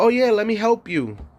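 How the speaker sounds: falsely sweet, high, fake-friendly helpfulness. Retelling being robbed at the Metro card machine, speaker quotes the girl: imitating the girl who helped. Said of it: "she's like".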